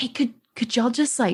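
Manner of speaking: soft, hushed whisper. Retelling a story, the speaker acts out what she said: retelling a whisper. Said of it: "she like whispers and she's like".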